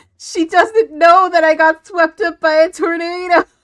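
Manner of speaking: imitated tearful cry. Retelling waking up from a tornado nightmare: imitating own crying in a dream. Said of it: "waking up in tears because I'm like".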